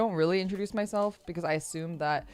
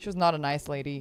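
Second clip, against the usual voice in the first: ordinary talk, nothing marked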